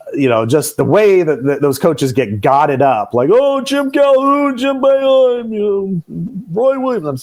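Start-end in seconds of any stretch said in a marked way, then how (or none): 3.3-7.2 very high-pitched, excited announcer voice. Listing coaches' names in a Dickie V voice. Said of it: "I'm using my Dickie V voice".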